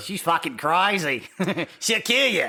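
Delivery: put-on Australian accent. Voicing a mother-in-law's warning about her daughter, in a Crocodile Dundee accent. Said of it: "I hear this in the Crocodile Dundee accent".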